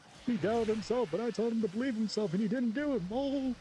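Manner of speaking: put-on voice pushed very high in pitch. Playing a game and talking to himself, the speaker slips into his Hank Hill voice. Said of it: "that was just me doing my Hank Hill voice".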